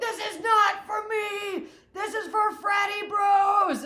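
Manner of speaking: very high, loud, slow, drawn-out yell. Retelling being out on a boat, steering it: imitating her own yell. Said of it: "I was yelling".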